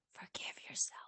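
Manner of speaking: whispering on purpose. Giving an instruction while leaning in: deliberate whisper. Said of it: "I leaned in and whispered on purpose".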